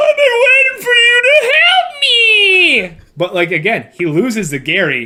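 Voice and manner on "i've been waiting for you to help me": very high, sobbing, breaking-down crying scream. Retelling a character screaming at God, imitating a screaming plea. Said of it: "he just screams".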